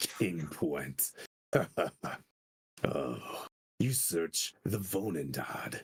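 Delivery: deep, slow movie-trailer announcer voice. Describing a game round, using one voice for everything today: movie commercial voice. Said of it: "someone making a movie commercial".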